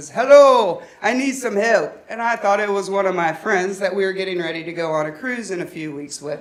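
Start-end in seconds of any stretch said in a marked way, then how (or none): 0.1-2.0 put-on heavy Jamaican accent, laid on thick, slow and raised. Retelling what a woman caller said on the phone, in a thick jamaican accent. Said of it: "speaking in a very thick Jamaican accent".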